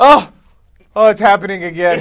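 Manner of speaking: high, loud, hammy horror-style overacting. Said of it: "He just goes".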